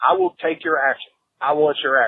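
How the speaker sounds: loud hollering, calling across a distance. Retelling hollering at other gamblers during a bet, retelling own hollering. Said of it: "I just started hollering".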